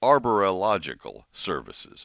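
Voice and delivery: slow, deliberate, careful enunciation of every syllable. Repeating a sponsor's name after slurring it, with slow careful enunciation. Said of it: "Let me say that a little more slowly".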